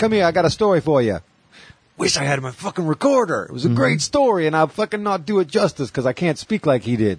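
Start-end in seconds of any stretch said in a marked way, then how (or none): 0.0-1.2 put-on thick New York accent. Retelling what a stranger who liked his shirt said to him: new york accent. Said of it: "Total New York accent".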